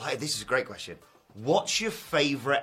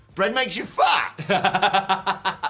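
loud, high, very slow, drawn-out belting; 6 semitones higher, 7 dB louder than usual. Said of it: "I was the same as Scott Pilgrim, going".

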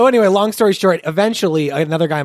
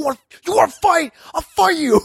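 mock screaming, much higher pitch; 10 semitones higher than usual. A player retells an opponent who fell and screamed at him, retelling a scream. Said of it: "starts screaming at me like".

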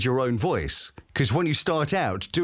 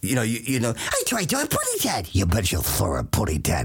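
old, classic cartoon character voice, slower; 3 semitones lower than usual. Paying tribute to classic voice actors, doing an old cartoon character voice. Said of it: "character voices performed by people like Mel Blanc".

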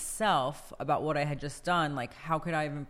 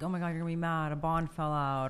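ordinary delivery

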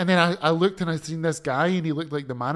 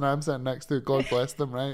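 plain

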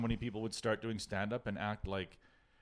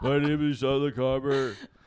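put-on boring voicemail voice, higher and louder; 4 semitones higher, 11 dB louder than usual. Mocking how a comic talks, imitating Sean LaComber's voicemail voice. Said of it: "you don't wanna talk like".

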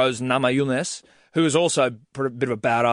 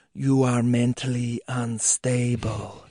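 put-on whispering voice. Retelling a champion's face-off taunt to a challenger: imitating someone whispering. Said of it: "just whispering it in her face".

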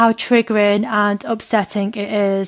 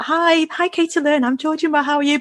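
composed, professional, high, overly polite put-on voice; 6 semitones higher than usual. Acting out how a professional interviewer would greet the guest: mock professional greeting. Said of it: "I should be more professional".

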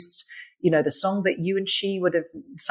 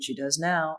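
mock mutter under breath, much quieter, slower; 2 semitones lower, 7 dB quieter than usual. Retelling what a man walking in front said, under his breath. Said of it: "under his breath he went".

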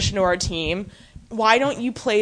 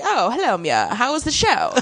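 put-on swooping, old-fashioned Hollywood film-star voice. Retelling a scene, voicing a character greeting a visitor: Katharine Hepburn voice. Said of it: "She's like Katharine Hepburn".

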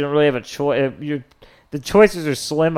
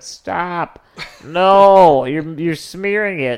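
put-on loud, slow scream with a stretched-out "no"; 4 semitones higher, 5 dB louder than usual. Retelling a couple's fight at their door, imitating the woman screaming. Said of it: "And she's screaming".

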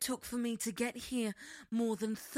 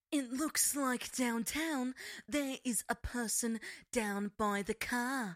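female presenter voice with an Australian accent. Asked to show it, the speaker does the australian female presenter voice. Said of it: "I do the Australian like female presenter voice".

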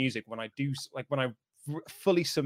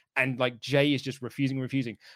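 normal talking voice

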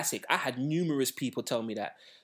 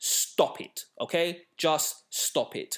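very slow, deliberate, passionate and heated insistence. Ranting against hip-hop Twitter opinions: raised voice. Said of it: "I'm sorry if I keep raising my voice".

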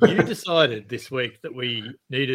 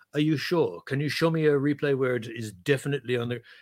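put-on French accent. Retelling a match, quoting the referee questioning the TMO, French-accent impression of Matthew. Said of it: "I love your French accent".

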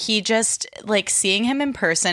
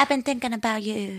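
babyish put-on voice; 3 semitones higher, 4 dB quieter than usual. Talking about an episode with a co-host, Katie baby voice. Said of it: "Katie does this baby voice".

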